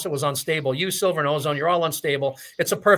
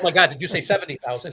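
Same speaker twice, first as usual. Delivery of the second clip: normal talking voice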